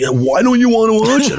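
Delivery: very high, play-acted, indignant, pissed-off tone. Retelling his reaction to refusing a cartoon, imitating him pissed off. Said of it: "he gets all like pissed off".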